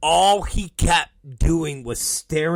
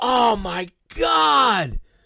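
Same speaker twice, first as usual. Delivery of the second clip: put-on anguished gasp, "God" stretched out, pitched up; 8 semitones higher than usual. Retelling a man's reaction to blood on his jacket: mock pained. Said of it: "Enzo has this look of pain".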